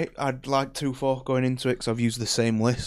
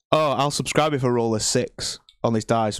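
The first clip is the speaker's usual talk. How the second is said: ordinary talk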